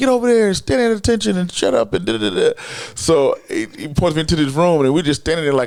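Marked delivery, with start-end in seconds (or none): 0.0-2.6 high, barking, shouted yell. Retelling how a man at the airport yelled orders: imitating someone yelling. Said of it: "He starts yelling at me".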